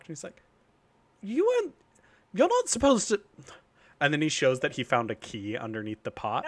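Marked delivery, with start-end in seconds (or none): 1.2-3.2 play-acted very high, loud startled shocked outburst. Retelling a character who finds the door unlocked, acting out a shocked reply. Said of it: "look all shocked".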